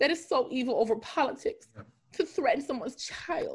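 speaking through tears in a tearful, crying voice. Explaining a story of threats sent to someone's daughter, crying. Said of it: "I feel like crying".

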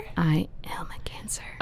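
whispering. Chatting about birthdays with another speaker; whispered. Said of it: "I don't know why I just whispered".

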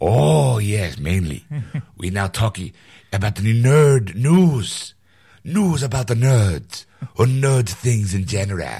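terrible put-on French accent. Explaining to ed what part two covers, in a bad fake french accent. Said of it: "that is the worst French accent ever".

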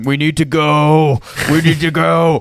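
high, loud, urgent shouting with "go" stretched out. A player narrates their character continuing to shout, shouting. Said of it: "and I just continue shouting".

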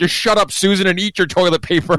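shrill, high-pitched shouting. Retelling a scene where a mom answers her kid at dinner, imitating a mom yelling. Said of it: "the mom just yells at the kid".

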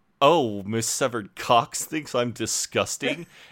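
put-on, loud, mild exclaimed outburst. Retelling what Jeremy says to Celia, imitating him saying it loudly. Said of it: "very loudly".

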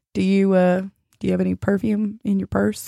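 put-on quiet whisper. Retelling someone leaning in close to ask a question: imitating a quiet whisper. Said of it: "real quiet, all in my ear".

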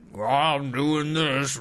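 plain, normal everyday talking voice. Comparing two voices by mimicking the listener's voice. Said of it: "your voice is like".

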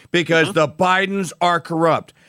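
ordinary talk

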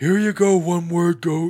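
put-on deep solemn voice. Doing an impression of George, who has a deep solemn voice. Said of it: "He's more like".

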